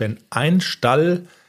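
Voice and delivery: slow, with stress on ein in ein Stall.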